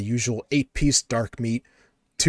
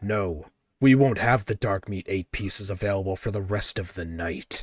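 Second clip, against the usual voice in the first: dark, darkened put-on voice; 3 semitones lower than usual. Retelling a drive-thru window voice's reply: dark voice. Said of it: "the darkness to your voice there".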